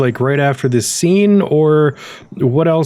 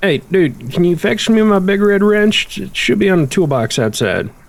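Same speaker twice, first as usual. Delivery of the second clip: goofy, pitched-up, drawn-out southern drawl; 5 semitones higher than usual. A game character asks the player for a favour, in a Mater voice. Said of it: "I gave you a voice like Mater".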